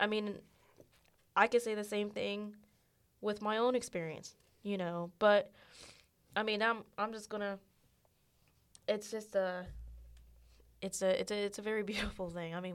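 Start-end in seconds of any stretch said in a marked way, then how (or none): 8.9-12.5 voice choking with emotion. Talking about a beautiful change in someone's spirit, choked up. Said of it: "we're getting all choked up here".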